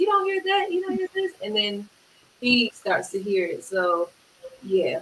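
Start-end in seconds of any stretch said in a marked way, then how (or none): 0.0-1.3 very high, excited, incredulous disbelief. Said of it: "And I'm like".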